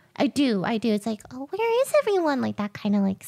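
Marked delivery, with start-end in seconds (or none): 1.3-2.4 put-on high, small, scared little girl voice. Showing a line voiced for Onion Cookie: put-on scared little girl voice. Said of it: "scared little girl sort of voice".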